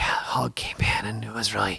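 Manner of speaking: stage-whispered narration. Retelling filming a night hog hunt, retelling whispering to camera. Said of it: "Why am I still whispering?".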